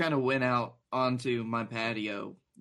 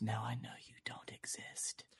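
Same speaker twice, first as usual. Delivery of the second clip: very quiet, breathy, hushed whisper; 3 semitones lower, 13 dB quieter than usual. Retelling a drunken night, what was said to the universe: retelling a whisper. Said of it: "I just whispered to the universe".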